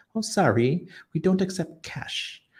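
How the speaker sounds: put-on pleasant British accent. Retelling what a woman at a church told the speaker, imitating her british accent. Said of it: "with her nice British accent".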